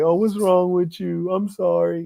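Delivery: weak, high-pitched, caving-in voice near tears. Mocking how a weak man folds when his partner cries. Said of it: "a weak male, you, you gonna fold on that".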